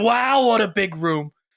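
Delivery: slow, deliberate inflection, leaned into. Retelling trying out a line after hearing it done, in a Donald Trump impression. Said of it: "He nails the inflection like perfectly".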